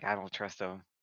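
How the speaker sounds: acted hushed whisper. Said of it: "She's, like, whispering".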